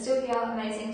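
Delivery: ordinary delivery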